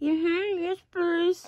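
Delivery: speaking through a mouthful of food. One of the diners answers the offer of water, talking with food in mouth. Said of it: "You have food in your mouth".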